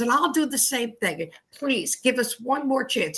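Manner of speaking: put-on pleading, begging schoolboy voice. Retelling a boy in trouble asking for another chance: imitating a boy begging. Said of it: "And he's begging".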